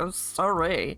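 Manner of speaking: sarcastic, mocking tone. Imitating what Mel would say: imitating sarcastic Mel. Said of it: "Mel's very sarcastic, be like".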